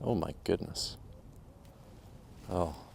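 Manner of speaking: whispered, hushed, slow, disappointed sighing exclamation. Watching the other player's putt go in: disappointed. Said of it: "You sound so disappointed".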